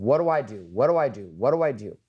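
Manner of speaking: mock-panicked, frantic voice. Retelling the son's girlfriend calling in a panic, acting out frantic panic. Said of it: "she's freaking the fuck out".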